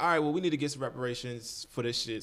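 ordinary talk, nothing marked

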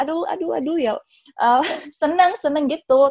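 happy gushing exclamation.

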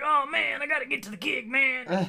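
weird, very high, slow jazzy drawl. Quoting a remembered parody scene to a listener, in Max Rebo's weird jazzy voice. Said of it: "they give him this weird, like, jazzy voice".

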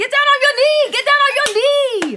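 shrill, booming, rushed, high, loud excited shouting. Retelling a family proposal, Aunt Bev urges the proposer to kneel: imitating Aunt Bev's excitement. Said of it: "I just remember the excitement and the energy".

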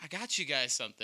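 normal talking voice

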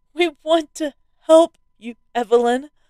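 high shout. The narrator's wife calls to Evelyn from beside him, shouting. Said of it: "shouted my wife from beside me".

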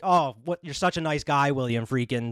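ordinary talk, nothing marked

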